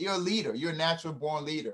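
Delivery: ordinary talk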